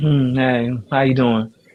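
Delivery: mock offhand, lukewarm, half-hearted tone. Retelling how she greeted him when they met: imitating a lukewarm greeting. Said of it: "she gave light love".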